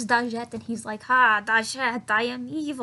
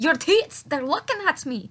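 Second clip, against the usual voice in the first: weird, odd put-on Scottish accent; 4 semitones higher, 4 dB louder than usual. Retelling a scene where a man speaks to a woman, weird scottish accent. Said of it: "he slipped into like this weird Scottish accent".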